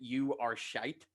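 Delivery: shite said in a put-on American accent. Retelling a heckler at a comedy gig: imitating an American accent. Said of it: "but it was an American accent".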